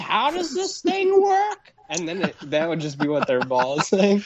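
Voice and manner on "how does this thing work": put-on elderly voice, higher. Imagining the recordings an old person would leave: imitating an old person. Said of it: "the recordings that the old people would leave would be like".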